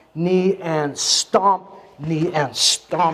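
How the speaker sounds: very slow speech, each word drawn out.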